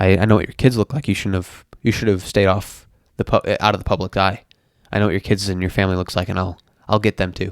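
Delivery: normal talking voice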